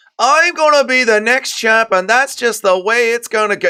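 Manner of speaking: whiny, high-pitched. Mocking a fighter's voice, imitating him as whiny. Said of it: "He sounds like a whiny little bitch".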